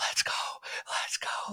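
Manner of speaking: urgent yet hushed, straining whisper-scream. Speaker recalls cheering the game's final minute without waking anyone, retelling a whisper-scream. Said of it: "whisper screaming like".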